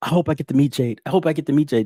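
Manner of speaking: put-on, mock-pleading, begging voice. A speaker retells how a man kept asking to meet jade, imitating someone begging. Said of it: "he's sitting there begging".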